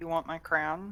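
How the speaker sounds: secretive, soft, hushed half-whisper. In a game session, a player's character asks Saska a question, half-whispering. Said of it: "I am going to whisper to Saska".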